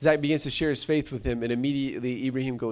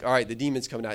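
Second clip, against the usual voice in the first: ordinary delivery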